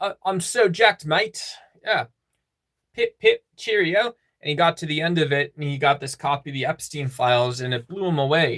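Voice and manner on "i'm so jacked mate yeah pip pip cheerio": higher-pitched put-on British man's accent. Retelling a joke story about a CrossFit guy in Britain: imitating a British guy. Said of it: "in Britain. He goes".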